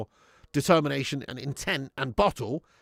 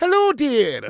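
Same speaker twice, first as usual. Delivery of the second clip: shrill, very high, booming loud put-on voice, squealed; 11 semitones higher, 9 dB louder than usual. Celebrating eight hundred likes with viewers, in a Mrs. Doubtfire voice. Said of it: "In my best Missus Doubtfire voice".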